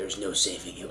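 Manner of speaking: very low, very soft, seductive, sensual half-whisper. Role-play game, player's character answering a screaming woman: sensual half-whisper. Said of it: "I whisper sensually into her ear".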